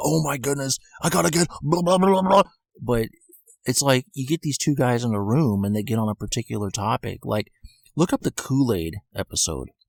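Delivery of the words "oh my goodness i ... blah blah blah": high babble, pitch bouncing all over the place. Describing a podcast duo, imitating Bert all over the place. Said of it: "Bert's just, like, all over the place".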